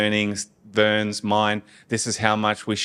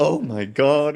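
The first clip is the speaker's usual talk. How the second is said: put-on flamboyant gasping exclamation, higher; 5 semitones higher than usual. Retelling a colleague's reaction to news of leaving: imitating a colleague's flamboyant gasp.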